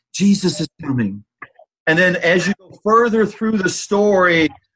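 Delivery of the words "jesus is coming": soft, hushed whispering. Speaker retelling his wife's lesson, voicing God at the start of Genesis, whispering.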